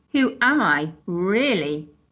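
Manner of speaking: slow, contemptuous, sneering tone. Mr. Crepsley challenges Steve, who claims to know who he really is: sneering. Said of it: "he sneered".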